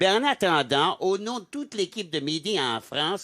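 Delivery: put-on Canadian French accent, Québécois.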